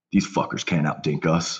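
muttering under the breath. Retelling a teammate's remark after winning a long rally: muttering under his breath. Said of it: "under his breath lightly just says".

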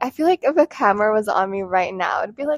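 usual speaking voice

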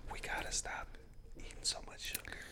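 mock whisper, very soft and fast.

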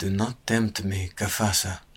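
breathed, very quiet. A Kadari warns another man, too quiet for the gray man to hear; breathed. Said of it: "breathed the Kadari, too quiet for the gray man to hear".

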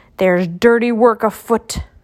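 distrustful, suspicious grumbling. Grumpy, always suspicious, speaks to the other dwarves, grumbling. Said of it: "Grumpy grumbled".

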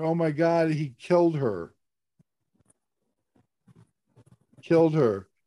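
words broken up by sobbing cries. Retelling what friends said backstage: imitating people sobbing. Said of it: "they're sobbing".

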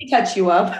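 ordinary delivery

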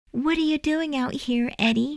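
very high, soft, sugary-sweet voice. A girl asks her brother a question when he appears, sweetly. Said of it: "she asked sweetly".

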